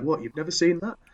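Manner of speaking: put-on Wakefield accent. Retelling Elizabeth's reaction, imitating Elizabeth with a Wakefield accent. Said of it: "it sounds like she's from fucking Wakefield".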